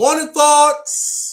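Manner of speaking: booming, very loud, very high shout. Going live and announcing the segment: shouting 'morning thoughts'. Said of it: "why you shout like that when you say morning thoughts?".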